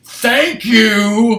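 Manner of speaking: piercing, loud, high sarcastic yell, drawn-out "you". Retelling a voice yelling from another room after the alarm rang 20 minutes, retelling a sarcastic yell. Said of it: "yell out sarcastically".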